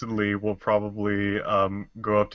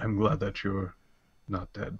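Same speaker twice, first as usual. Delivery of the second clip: gentle, hushed, soft, quiet voice; 5 dB quieter than usual. A roleplay player voices their character speaking out loud to everyone, soft voice. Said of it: "but in a in a soft voice".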